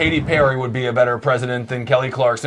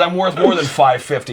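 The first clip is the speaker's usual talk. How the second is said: ordinary talk, nothing marked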